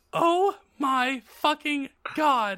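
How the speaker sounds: high, excited, thrilled shriek of delight. Reading a story aloud, the narrator voices a character hearing of a concert; screaming. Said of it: "I screamed".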